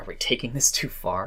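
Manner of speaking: dry, irritated, annoyed sarcasm. Showing how a character in the scene might ask: really sarcastic and annoyed. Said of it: "she could be really sarcastic and annoyed by the question".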